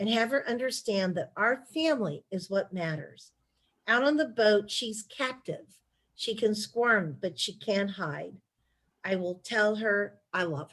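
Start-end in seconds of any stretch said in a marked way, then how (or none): none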